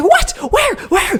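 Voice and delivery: acted frantic, panicked freak-out, very high. Retelling mom's reaction on hearing someone is choking, imitating mom freaking out. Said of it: "she starts freaking out too".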